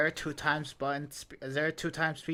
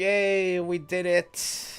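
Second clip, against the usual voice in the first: very slow, very loud, drawn-out deadpan sarcasm; 3 semitones higher, 8 dB louder than usual. Celebrating finishing a task that must be repeated: sarcastic unexcited yay. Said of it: "As you can tell from the excitement from my voice".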